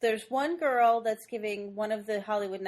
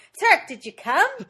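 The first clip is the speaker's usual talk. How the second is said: put-on nanny voice, yelled, higher and louder; 6 semitones higher, 11 dB louder than usual. Retelling a movie character yelling from the back seat: imitating a yell in Fran Drescher's voice. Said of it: "she keeps yelling it".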